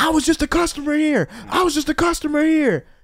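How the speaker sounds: very high, shrill, shouted yell. Describing a raid on a weed shop, imitating someone yelling.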